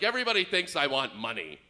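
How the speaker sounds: play-acted, mildly irritated, slightly annoyed grumble. Retelling what an annoyed stranger said while walking away: imitating a slightly mad man. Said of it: "he gets a little mad".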